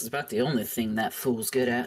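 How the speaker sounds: grumbled, muttered aside. Voicing an innkeeper muttering about a guest: muttered under her breath. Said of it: "Under her breath, she goes".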